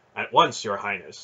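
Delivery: ordinary delivery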